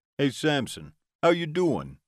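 put-on New York mobster accent. A narrator reads a vampire calling through a speaker, sounding like Tony Soprano. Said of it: "He sounded more like a Tony Soprano".

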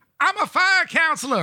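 very high-pitched, put-on comic sketch voice. Show how you imitate him whenever he pops up in a skit on SNL, in a Kenan voice. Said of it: "I'll do the the the Keenan voice".

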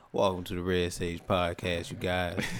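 low, velvety, silky smooth radio-host voice. Co-host gets his chance to do the podcast intro, in a silky smooth radio voice. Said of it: "He hit him with the silky smooth radio voice".

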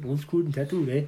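attempted put-on Canadian accent. After admitting they can never do canadian accents, trying one: canadian accent. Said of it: "I can never do Canadian accents".

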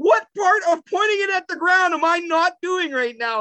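very high, fed-up, furious screaming. Retelling getting mad at him during a virtual reality game, retelling a scream. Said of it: "And I'm like screaming".

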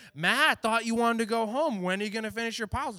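put-on high, mocking, teasing, needling taunt. Retelling a boss taunting a worker to finish: imitating a taunting boss. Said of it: "mocking me and taunting me".

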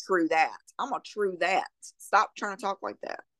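ordinary talk, nothing marked

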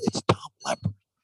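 secretive, hushed stage whisper. Retelling how a partner handed over the phone: imitating a whisper. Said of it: "He starts to whisper".

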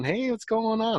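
mock laid-back, chill, easy, friendly tone, very high. Retelling a friend walking up smiling to greet: imitating a friend's chill smiling greeting. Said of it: "all nice and chill, walked up smiling".

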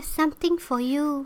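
put-on high, young, teen-like voice. Retelling a story, quoting a woman: imitating an unnaturally young, playful voice. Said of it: "She said in a voice that wasn't natural for her age".

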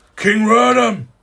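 shrill, high, loud, far-carrying alarmed cry. Narrating what the listeners hear beyond the open doors: great shouting. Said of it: "you hear great shouting and commotion".

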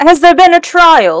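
booming, very loud call pitched very high. A player's character steps forward as a prisoner waits at the chopping block; very loud voice. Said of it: "just walk forward in a very loud voice and say".

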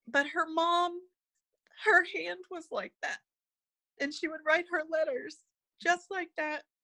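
high, choked-up voice on the verge of tears.

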